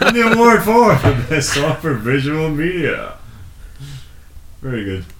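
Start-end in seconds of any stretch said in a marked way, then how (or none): 0.0-3.2 loud, slow awards-show announcer voice. Repeating how another speaker read out an award category, Grammy announcer voice. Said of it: "you actually sounded like a Grammy announcer".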